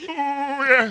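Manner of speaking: very high, loud, belted, drawn-out yeah. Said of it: "You wanna hear my [name] impression?".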